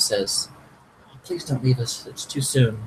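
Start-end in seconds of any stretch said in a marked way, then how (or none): 1.2-2.9 soft, pleading whisper. A character speaks into the downed player's ear before healing them, whispering. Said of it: "she kind of whispers into your ear".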